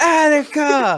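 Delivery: very high, slow, drawn-out yell.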